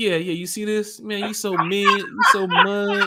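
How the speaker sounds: very high, drawn-out, swooping, gloating taunting. Retelling the speaker's son taunting Madden opponents over the headset, imitating son's trash talk. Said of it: "over there trash talking".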